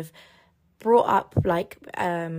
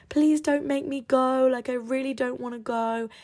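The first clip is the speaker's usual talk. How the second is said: put-on, high, hysterical, tearful crying voice; 7 semitones higher than usual. Retelling begging a parent in the car: retelling a hysterical crying plea. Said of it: "I'd be hysterically crying".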